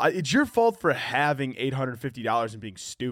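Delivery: ordinary delivery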